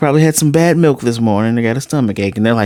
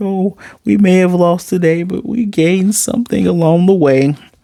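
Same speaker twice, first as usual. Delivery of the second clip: high, choked-up, mock tearful crying speech; 6 semitones higher than usual. Retelling a scene where a character cries: imitating someone crying. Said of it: "Papa's even crying like".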